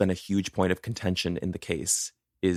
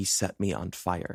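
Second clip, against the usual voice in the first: faint, slow, hushed, drawn-out half-whisper; 5 dB quieter than usual. Retelling a burned victim's words to witnesses: imitating a half-whisper. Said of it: "And she whispers".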